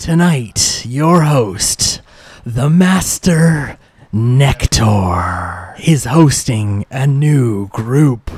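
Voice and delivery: echoing, slow, sweeping showman announcer voice.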